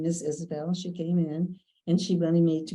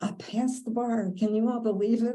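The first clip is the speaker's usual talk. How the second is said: acted-out loud call, yelled, pitched up; 5 semitones higher than usual. The speaker retells telling friends in Florida about passing the bar, retelling a yell. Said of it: "I'm yelling at my friends".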